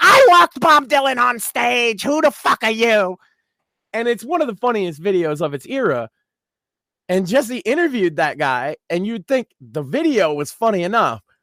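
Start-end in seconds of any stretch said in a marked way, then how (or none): 0.0-3.2 shrill, high-pitched screaming rant. Retelling a viral video of a man yelling at a trumpet player: imitating Douglas Levison screaming. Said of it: "just screaming".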